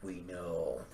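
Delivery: low, soft, calm delivery. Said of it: "Frank's gonna turn around".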